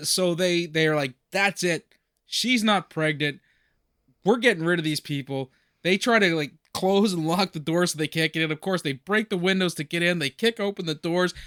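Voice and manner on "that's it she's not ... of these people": ordinary talk, nothing marked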